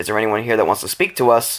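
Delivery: ordinary talk, nothing marked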